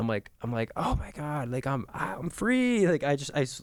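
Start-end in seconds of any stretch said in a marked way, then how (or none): 0.8-2.9 very slow, high, drawn-out cry of release. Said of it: "I literally screamed at the top of my lungs".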